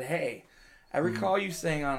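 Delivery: ordinary delivery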